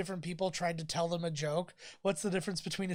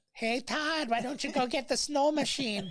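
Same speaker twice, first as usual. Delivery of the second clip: put-on Alaskan accent, higher pitch; 7 semitones higher than usual. Joking about a movie starring Sarah Palin: Sarah Palin voice. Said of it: "a movie where the hero would be Sarah Palin".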